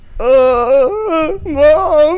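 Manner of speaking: very high, whiny, fake sobbing. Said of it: "I'm crying again".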